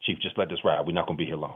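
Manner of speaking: low, hushed, covert whisper. Retelling how a man calling him out before everyone whispered to him; retelling a whisper. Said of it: "he whispers".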